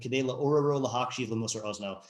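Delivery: ordinary talk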